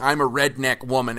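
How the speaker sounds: normal talking voice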